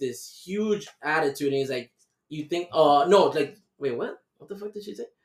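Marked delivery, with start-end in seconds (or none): none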